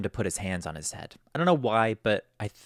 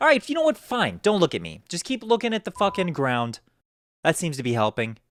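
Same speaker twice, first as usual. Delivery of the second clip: mock fed-up, sarcastic, pitched-up, exasperated venting; 7 semitones higher, 4 dB louder than usual. Acting out what he said when they would not look at him, retelling an upset outburst. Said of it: "he starts to get kind of upset".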